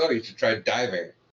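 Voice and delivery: ordinary delivery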